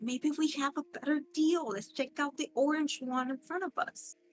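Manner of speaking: hushed whisper. Speaker nudging someone to suggest checking another deal, whispering. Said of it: "I'm gonna whisper".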